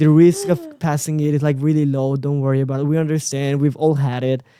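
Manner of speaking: ordinary delivery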